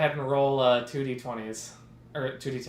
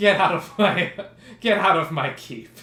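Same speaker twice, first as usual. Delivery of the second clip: laughing while talking, higher and louder; 6 semitones higher, 8 dB louder than usual. Voicing a character who orders the party out of his keep, laughing while ordering them out. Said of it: "He laughs and goes".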